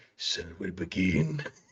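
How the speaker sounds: put-on growly voice. Showing the voice imagined for a lint character named Linter, growly Linter voice. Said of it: "It's an intimidating lint".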